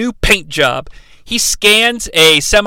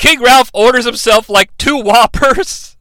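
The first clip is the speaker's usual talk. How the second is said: plain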